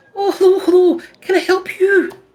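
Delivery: put-on high-pitched young female voice. Narrating a visit to a shop, voicing a young woman there: young woman voice. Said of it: "a young woman's like".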